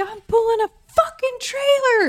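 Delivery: very high, shrill, enraged yell. Retelling a road rage moment, screaming at another driver: imitating herself screaming. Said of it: "I'm screaming at this lady".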